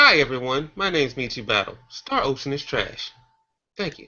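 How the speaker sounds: mock courteous, fake-polite, put-on nice tone. Restating a blunt opinion after being called too disrespectful: mock polite, put-on nicer tone. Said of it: "Let me be nicer".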